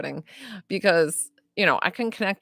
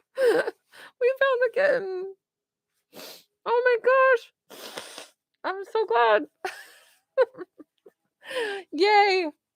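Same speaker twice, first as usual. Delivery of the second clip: crying through the words, very high; 4 dB quieter than usual. Reacting on air to news that the kitten was found, crying while talking. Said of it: "I totally am crying".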